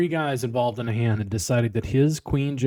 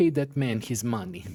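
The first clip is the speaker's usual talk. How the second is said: put-on strange Russian accent, laid on heavily; 4 dB quieter than usual. Mocking praise for an actor, the speaker quotes John Malkovich in a weird Russian accent. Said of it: "kind of weird Russian accent nobody's ever heard".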